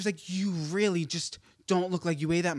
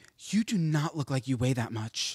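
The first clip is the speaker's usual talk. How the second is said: put-on heartfelt, sincere tone, much lower-pitched; 4 semitones lower than usual. Retelling a woman's remark about her weight: retelling a heartfelt earnest remark. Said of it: "from her whole chest".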